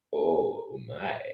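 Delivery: "oh my" said slowly, lingering and stretched out. Trying the Sulu line on request: slow Sulu "oh my". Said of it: "you gotta be quicker than that".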